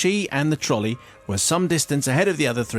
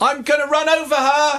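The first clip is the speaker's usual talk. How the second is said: shrill, very high, loud shout; 5 dB louder than usual. Retelling warning people while a trolley rolls toward someone: retelling own shout. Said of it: "I'm shouting".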